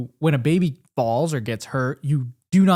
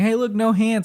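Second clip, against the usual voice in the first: mock boastful, high show-off call; 8 semitones higher than usual. Retelling calling out to parents while riding a bike: imitating showing off. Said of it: "trying to show off to my parents saying".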